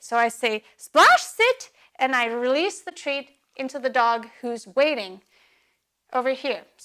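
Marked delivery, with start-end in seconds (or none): 0.8-1.7 very high, loud, eager excited voice. Giving a dog a cue while holding a treat, excited lively voice. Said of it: "with the exciting voice".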